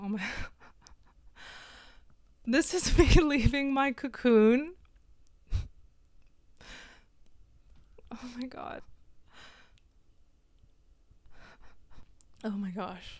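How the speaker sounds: soft, choked-up, overcome, barely holding it together. Speaking to viewers about expressing themselves, getting emotional. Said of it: "I'm getting emotional".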